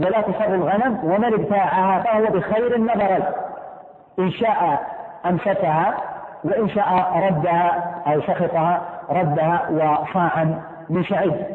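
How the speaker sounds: usual speaking voice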